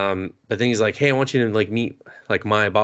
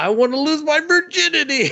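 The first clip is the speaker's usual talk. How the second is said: put-on very high, rising yelled cry. Retelling a character's moment with a genie in a story: retelling a yell. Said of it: "So he yells out".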